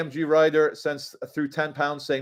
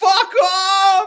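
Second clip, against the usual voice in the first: mock emotional outburst, higher and louder; 6 dB louder than usual. Retelling a manager squaring up to a YouTuber: imitating someone getting emotional. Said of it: "He gets all emotional".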